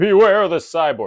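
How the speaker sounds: loud, wrong-sounding pirate voice. Reading a quiz clue quoting a dying pirate's warning: bad Billy Bones impression. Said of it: "That's not at all what he sounds like".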